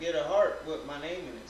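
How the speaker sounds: ordinary talk, nothing marked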